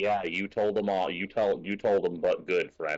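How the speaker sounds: low, utterly flat, dry deadpan. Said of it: "that just complete deadpan".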